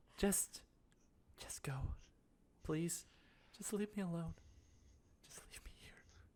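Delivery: breathy, frightened, cowering whisper. Voicing a badly hurt man who cowers back from the players: cowering, pleading to be left. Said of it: "he just, like, cowers back".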